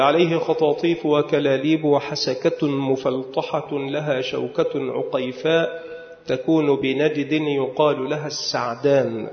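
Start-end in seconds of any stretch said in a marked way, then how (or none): none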